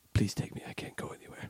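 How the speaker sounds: hushed whisper. Acting a scene, begging another character to take them along; whispering. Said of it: "Why are you guys whispering?".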